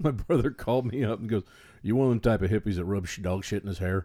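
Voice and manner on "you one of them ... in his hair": put-on Southern drawl. Retelling a brother's phone call in Billy Bob Thornton's accent. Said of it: "in, uh, Billy Bob Thornton's accent".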